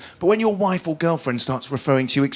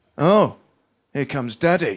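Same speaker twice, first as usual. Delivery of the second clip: slow, slightly pointed, mock passive-aggressive tone. Retelling his wife standing behind the children: imitating passive-aggressive tone. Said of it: "in a slightly more passive-aggressive way".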